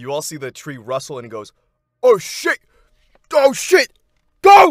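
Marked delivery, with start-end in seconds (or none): 2.0-4.7 very high, very loud, shrill, slow, drawn-out yell. Voicing a figure in a rustling tree as arrows are drawn: yelling. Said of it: "he yells out".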